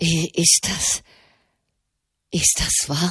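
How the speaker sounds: trembling voice. Gregor, unable to rise from his chair, asks about the news in a trembling voice. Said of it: "fragte er mit bebender Stimme".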